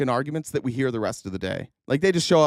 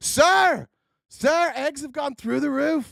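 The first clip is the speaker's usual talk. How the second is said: mock alarmed scream, very high-pitched; 11 semitones higher than usual. Reminding the other speaker of the people who screamed at him, the speaker retells the screaming. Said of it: "all the people screaming".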